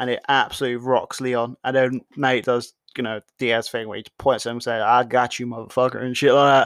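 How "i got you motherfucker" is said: put-on Tennessee accent. Speaker retelling a fighter's taunt to his opponent, in a tennessee accent. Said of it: "I don't know why I've done a fucking Tennessee accent".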